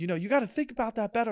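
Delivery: very high-pitched, lecturing, scolding tone. Retelling a viral story where a cop talks to a woman, imitating a scolding cop. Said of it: "scolding her".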